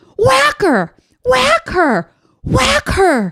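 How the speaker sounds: mock very high, swooping, drawn-out holler. Retelling a dad on the sidelines at a girls lacrosse game: imitating a dad yelling. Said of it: "the guy is yelling".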